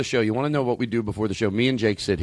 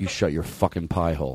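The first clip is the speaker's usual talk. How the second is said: fake hostile, mock-aggressive, lower; 5 semitones lower, 3 dB quieter than usual. Snapping back at another speaker who starts asking a question: mock-aggressive. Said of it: "You're the most aggressive host".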